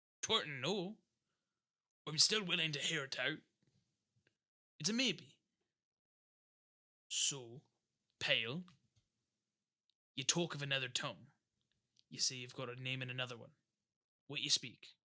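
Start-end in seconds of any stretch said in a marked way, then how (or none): 2.1-14.9 eccentric, odd pirate captain character voice. The game master, as a captain looking to sign on the group, questions a player in Captain Vobago voice. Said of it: "The group finally meets one Captain Vobago, an excentric man looking to sign on Curhd, Pale, and Silver. / he kind of like scrunches his brow and looks at both of you. / The group finally meets one Ca".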